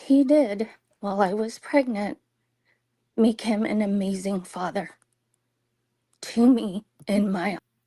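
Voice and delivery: fast, trembling, quivering, wavering voice. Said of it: "with that quivering voice".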